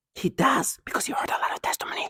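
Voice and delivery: soft, voiceless, breathed-out sneering whisper. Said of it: "they whisper things like that".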